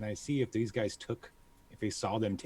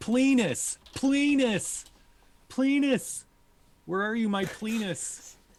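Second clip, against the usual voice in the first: very high, drawn-out yelling; 12 semitones higher, 6 dB louder than usual. Narrating a scene where Near runs out calling his falcon, Near yelling in character. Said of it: "start yelling".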